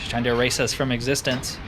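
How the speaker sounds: plain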